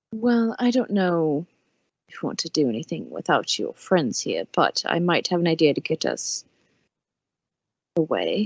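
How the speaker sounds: low, confidential, private tone. Narrator voicing a character who speaks to the listener, speaking very quietly. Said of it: "He'll say it very quietly to you".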